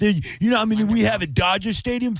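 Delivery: play-acted shrill, very high, obnoxious, jeering heckler voice. Retelling a stadium heckle: imitating an obnoxious heckler. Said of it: "this guy was, like, being real obnoxious behind me. He's like".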